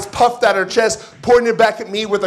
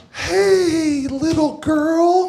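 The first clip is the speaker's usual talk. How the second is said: gentle, much softer, high, drawn-out hey; 8 semitones higher than usual. The speaker retells greeting a little girl while helping his brother; retelling a much softer greeting. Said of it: "I went in much softer".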